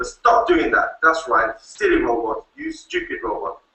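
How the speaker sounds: cross telling-off. Demonstrating to a robot how it reacts to an angry tone: angry scolding at a robot. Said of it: "getting angry with it and the tone of voice changes".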